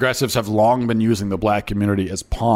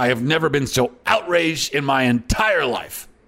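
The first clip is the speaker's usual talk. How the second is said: indignant, outraged yelling, higher pitched; 5 semitones higher than usual. Showing how a politician should confront opponents: indignant shouting. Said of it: "I would shout at the Democrats about this".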